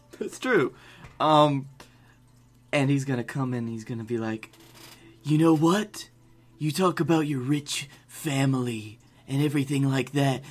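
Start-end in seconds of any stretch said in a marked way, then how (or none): 5.2-10.4 put-on wrestler promo voice. Imagining a wrestler's promo against the champion: baby Triple H voice. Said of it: "baby Triple H voice".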